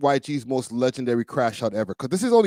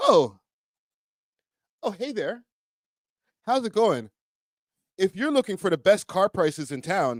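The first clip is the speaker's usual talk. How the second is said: breezy TV commercial spokesperson voice; 6 semitones higher than usual. Talking to his audience, showing how a television commercial talks: tv commercial voice. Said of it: "like a television commercial?".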